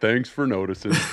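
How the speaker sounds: put-on character voice, nonchalant and unbothered. Retelling how a player reacted to the first catch of his career, in a nonchalant Eeyore voice. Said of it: "He came in like Eeyore from Winnie the Pooh".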